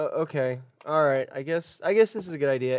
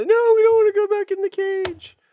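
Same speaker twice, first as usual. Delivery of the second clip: put-on crying children, higher and louder; 6 dB louder than usual. Voicing kids who don't want to go back in the cage: kids crying. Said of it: "the kids start to cry".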